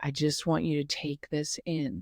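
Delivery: put-on calm voice. Retelling how a man slowly turned the speaker in a circle, imitating a calm Buddha-like voice. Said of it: "in his calm, Buddha like voice".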